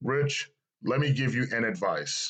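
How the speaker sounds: put-on speaking with Haitian accent. Quoting the speaker's strong mother, imitating a tender, sweet Haitian accent. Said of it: "she would say in her tender, sweet Haitian accent".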